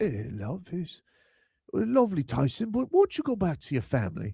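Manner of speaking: high, imploring beggar voice, pleading desperately. Imagining how Seydou Traore would talk to Tyson: pleading Seydou Traore impression. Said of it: "Every time you do that voice".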